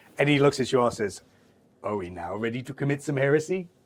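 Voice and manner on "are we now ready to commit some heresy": sneaky, sly, wicked, tempting tone. A game master speaks as Cax to the players: evil sneaky grin. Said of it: "says it with as evil of a sneaky grin".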